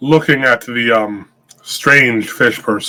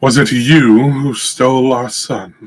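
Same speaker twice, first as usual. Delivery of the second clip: resounding, loud booming delivery. A narrator voices a woman who steps forward to question the group, booming voice. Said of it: "her voice booms with thaumaturgy".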